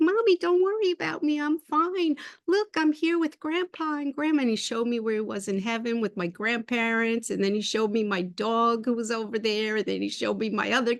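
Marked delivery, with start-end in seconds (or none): 0.0-4.4 put-on high little cat voice, much higher. A mother recalls her cat talking to her in her mind's eye; high-pitched little cat voice. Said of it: "he had this high-pitched voice".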